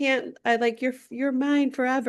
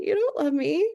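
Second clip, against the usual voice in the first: voice cracking and breaking; 4 semitones higher than usual. Retelling a movie scene, acting the man's line: imitating a cracking voice. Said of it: "his voice cracks".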